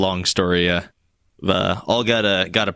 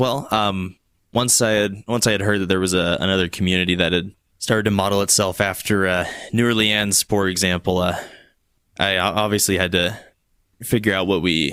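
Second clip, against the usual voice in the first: ordinary talk, nothing marked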